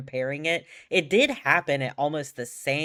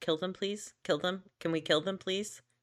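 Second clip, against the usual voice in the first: put-on soft, courteous, very polite tone; 4 semitones higher, 7 dB quieter than usual. Retelling someone's comms at a game-ending moment, mock-polite request. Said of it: "Caps is just like very politely going".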